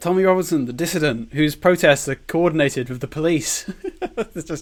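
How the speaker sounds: words broken up by laughing. Replying to the other speaker, laughing while talking. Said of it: "sorry, I'm laughing too much".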